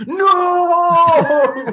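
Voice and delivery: very loud, very high, drawn-out scream. Describing a sound that seemed like someone screaming: imitating a scream. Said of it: "sound like someone screaming".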